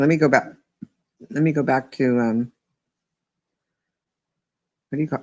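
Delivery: talking with hiccups interrupting. Speaker going back to a YouTube page to read, with the hiccups. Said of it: "Sorry, I got the hiccups".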